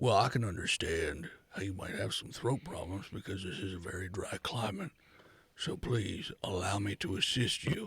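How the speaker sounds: very deep giant character voice. Voicing a Goliath who offers to help a coughing character: voicing a Goliath. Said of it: "Yes, a Goliath".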